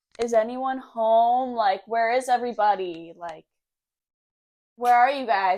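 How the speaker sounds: yelling, calling out.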